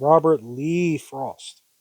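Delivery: heavy stress placed on Lee. Naming the poet of a poem, stress on Lee. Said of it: "I emphasize the Lee".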